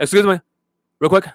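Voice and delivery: robot voice in short bursts. Imitating how some students talk: imitating choppy robotic speech. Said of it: "It's like a RoboCop".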